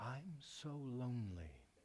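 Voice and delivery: very soft, hushed, barely-there voice. Retelling a life-changing moment, the speaker quotes what she said in a very soft voice. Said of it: "in a very soft voice".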